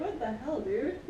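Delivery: ordinary delivery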